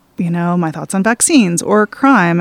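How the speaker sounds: ordinary delivery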